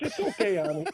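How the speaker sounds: kindly, sweet Southern lady's voice. Retelling what a woman told him after he apologized, in a nice little Southern accent. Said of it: "she had a nice little southern".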